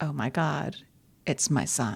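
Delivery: ordinary talk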